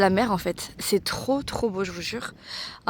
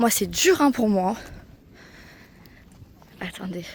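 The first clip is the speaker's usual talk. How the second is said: out of breath, breathless. Heading off with viewers to see the little goats, out of breath. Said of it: "Et je suis essoufflée".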